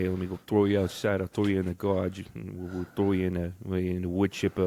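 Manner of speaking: put-on exaggerated Italian Boston mafia accent. Discussing subtle character accents, mocking an exaggerated Italian Boston mafia accent. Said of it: "you don't want to be like uber Italian Boston Mafia".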